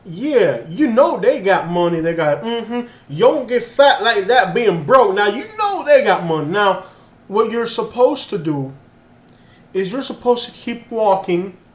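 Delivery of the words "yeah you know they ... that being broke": put-on funny Cajun accent. Retelling what a second man said about a passerby, in a funny Cajun accent. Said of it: "they got like a very funny Cajun accent".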